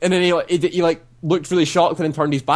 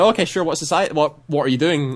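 plain

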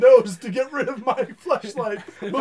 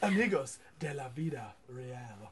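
put-on Spanish accent, very low and hushed; 12 semitones lower, 17 dB quieter than usual. Taking a turn saying the line everyone must repeat, in a spanish accent. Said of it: "say that line as much as like your perfect Spanish accent".

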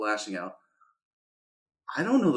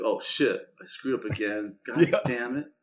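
ordinary talk

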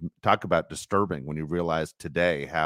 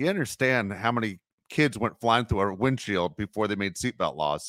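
usual speaking voice

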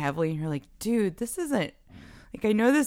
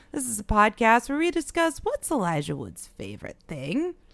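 put-on sinister, villainous inflection, pitched up; 6 semitones higher than usual. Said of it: "Decided to use a different inflection that time".

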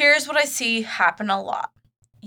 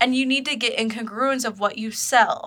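ordinary delivery

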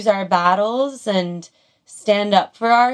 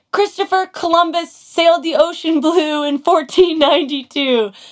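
loud, shouted reply; 8 semitones higher, 4 dB louder than usual. Retelling a scene where a guy yells back at a high schooler: retelling a yell. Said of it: "the guy yells back in his face".

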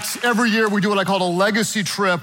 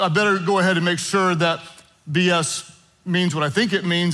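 normal talking voice

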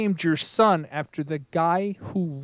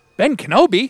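high, loud, amped-up excited shout. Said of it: "she gets so excited".

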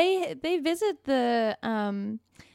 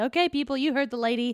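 ordinary talk

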